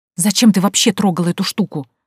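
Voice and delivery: ordinary delivery, nothing marked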